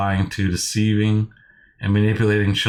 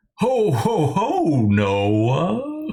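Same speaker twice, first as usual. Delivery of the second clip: very slow, stretched-out, high, swooping sing-song voice; 8 semitones higher than usual. Retelling a phone call where a caller suddenly asked for Santa Claus: Santa Claus voice. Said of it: "he didn't even warn me to be Santa Claus".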